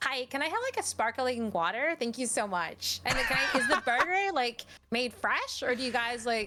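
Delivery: put-on Valley Girl American accent throughout. Playing a customer ordering food and a sparkling water, in a valley girl american accent. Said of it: "you went Valley Girl for your American accent".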